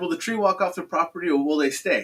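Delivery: ordinary delivery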